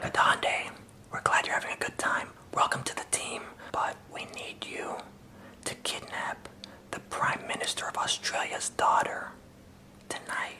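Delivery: very quiet, leaned-in whisper. Imagining the orientation lady leaning over, imitating a whisper. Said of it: "leaned over and whispered, like, all quiet".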